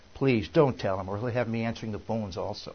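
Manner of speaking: ordinary talk, nothing marked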